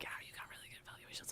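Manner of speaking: put-on whisper. Retelling a supervisor sharing good evaluations: imitating a whisper. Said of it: "he, like, whispered it to me".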